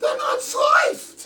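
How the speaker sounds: loud, very high falsetto. Retelling his reply on being handed unsliced salamis, in falsetto voice. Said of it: "in my best falsetto voice".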